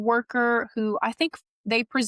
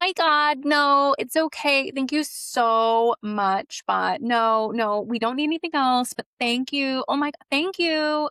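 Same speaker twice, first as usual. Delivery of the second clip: sugary, high, hyper-fake gushing, very drawn out; 6 semitones higher than usual. Speaker imitating the girlies politely declining an offer, mock hyper-fake gushing. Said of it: "this hyper fakeness".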